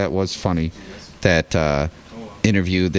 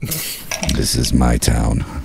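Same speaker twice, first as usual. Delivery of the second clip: slow, rough, drawn-out delivery; 8 semitones lower than usual. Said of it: "like Batman".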